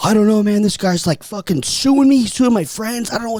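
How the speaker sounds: high, frantic, panicked babbling voice. Retelling how Brock reacted to a cease-and-desist email: imitating Brock panicking. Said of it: "I am p- panicking".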